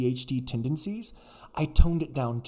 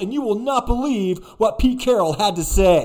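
bouncy, peppy, high, loud sports reporter voice; 8 semitones higher, 8 dB louder than usual. Recalling his first reporting at USC football practice, imitating his young reporter self. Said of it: "I'm talking like this. I'm like bouncing on my heels".

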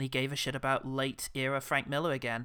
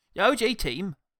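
put-on Cockney voice, higher and louder; 7 semitones higher, 7 dB louder than usual. Joking about a message to the team: Michael Caine voice. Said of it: "Michael Caine".

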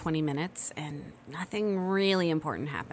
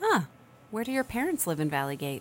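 usual speaking voice

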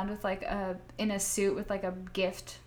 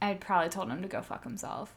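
ordinary talk

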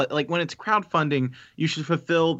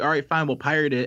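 usual speaking voice

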